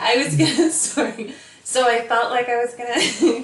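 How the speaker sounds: laughing while talking. Telling another speaker about a dark time, laughing while talking. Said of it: "I don't know why I'm laughing at this".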